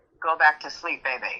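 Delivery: put-on quiet, hushed male whisper. Retelling a voice heard after getting out of bed at night, retelling a man's quiet whisper. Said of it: "like a really really quiet whisper".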